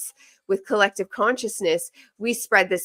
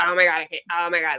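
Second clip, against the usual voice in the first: mock, dramatic, exasperated outburst; 2 semitones lower than usual. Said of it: "you just dramatic".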